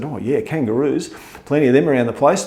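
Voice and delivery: ordinary talk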